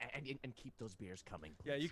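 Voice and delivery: speaking in a whisper. Asking a barmaid in character to keep beers coming: whispering. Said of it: "kinda whisper".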